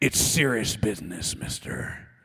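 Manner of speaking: put-on very low, old-school pulpit-style preaching voice. Quoting the pastor the speaker grew up under, imitating a preacher voice. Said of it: "i wish i had a preacher voice like that".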